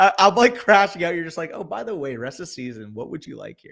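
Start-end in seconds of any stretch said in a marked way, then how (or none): 1.5-3.7 soft, chill, soothing voice. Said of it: "Like, the tone's so chill".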